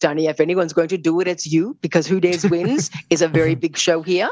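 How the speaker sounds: very deep put-on voice, dropped way low. Retelling what a man told him about a show, in a very deep voice. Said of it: "very deep voice".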